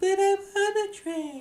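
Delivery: very high, slow, put-on girly voice. Repeating a line and asking if it sounds convincing, girly voice. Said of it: "Do you like my girl voice?".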